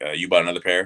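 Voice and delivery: ordinary talk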